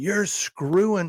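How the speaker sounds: high, loud, furious, angry screaming. Retelling how she reacted while out in public, imitating her screaming. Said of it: "starts screaming".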